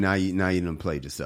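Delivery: plain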